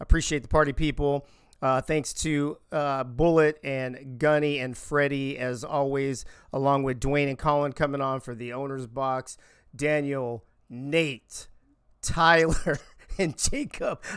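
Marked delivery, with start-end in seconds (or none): 9.7-14.0 very slow, much slower pace. Closing a broadcast, thanking the owner's box guests by name, very slow. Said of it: "I have to speak very slowly now".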